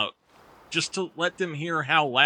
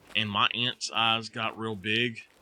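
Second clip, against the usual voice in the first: ordinary talk, nothing marked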